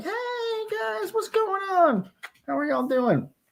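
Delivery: very high-pitched, slow pet-talk voice. Speaking for the pet Noodle during a noodle check: voicing the pet Noodle. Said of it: "Noodle's like".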